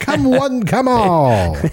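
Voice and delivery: very high, very slow, swooping carnival barker cry. Joking about showing old game consoles in a top hat: sideshow barker voice. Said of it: "I'm gonna treat it like a sideshow and be like".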